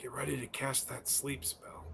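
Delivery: very soft, hushed whisper under the breath. During a tabletop game, a player speaks in character, whispering. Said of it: "I- I'll whisper".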